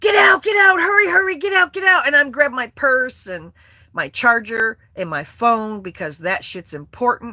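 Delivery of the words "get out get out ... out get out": very high, loud, urgent, frantic screaming. Retelling escaping a house fire, the speaker reenacts screaming at the dogs. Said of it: "start screaming at them".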